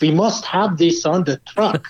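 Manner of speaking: put-on German accent in English. Retelling a man's reaction to a concept truck, imitated German accent. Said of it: "in this German accent".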